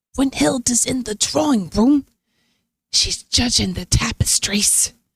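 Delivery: hushed whisper. Voicing a nervous host ushering guests inside: whispering in character. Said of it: "he lowers his voice down to whisper".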